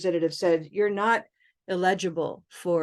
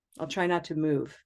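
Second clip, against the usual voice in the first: normal talking voice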